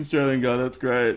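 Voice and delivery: plain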